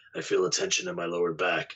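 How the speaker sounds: put-on low, gravelly voice of an elderly man. Retelling a strange voice heard while reviewing audio, gravelly old man's voice. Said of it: "you hear a gravelly old man's voice say".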